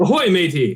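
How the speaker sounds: put-on Australian pirate accent. Greeting someone who is busy crafting, in an australian pirate accent. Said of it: "that's an Australian pirate".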